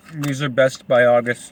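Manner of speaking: talking with mouth full. Snacking on chips before reading a book aloud, talking with mouth full. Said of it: "don't talk with food in your mouth".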